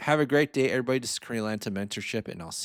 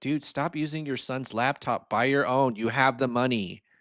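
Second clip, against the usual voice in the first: ordinary talk, nothing marked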